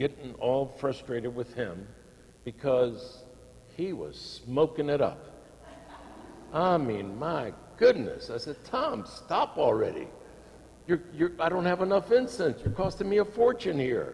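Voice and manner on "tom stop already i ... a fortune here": half-joking, playful mock scolding, pitched up. Retelling what he told a man using up his incense; retelling a joking complaint. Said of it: "I had to say in a joking way".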